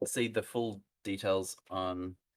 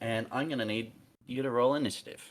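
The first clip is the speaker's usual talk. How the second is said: plain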